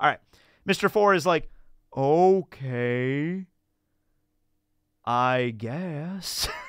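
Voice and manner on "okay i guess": very slow, sluggish, drawn-out, unhurried delivery. Describing how Mr. Four talks: Mr. Four talking very slow. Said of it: "he talks very slow".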